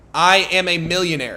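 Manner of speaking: ordinary delivery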